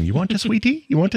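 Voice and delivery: put-on South African accent, very high-pitched. Speaker quotes a movie character talking to a little alien kid, in a South African accent. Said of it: "that South African".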